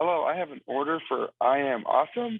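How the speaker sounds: ordinary delivery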